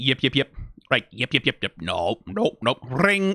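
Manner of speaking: small puppet-like alien voice. Comparing a game character to puppet aliens: Sesame Street alien voice. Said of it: "the little aliens from the Sesame Street".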